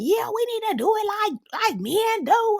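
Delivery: very high, shrill, hollering yell. Retelling what a woman yelled in agreement: imitating someone yelling.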